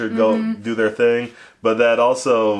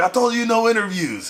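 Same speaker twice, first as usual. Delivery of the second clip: very high-pitched, explosive angry outburst; 12 semitones higher than usual. Retelling how Randy Savage refused an interview: angry Randy Savage impression. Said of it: "he gets all mad".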